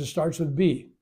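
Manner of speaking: ordinary talk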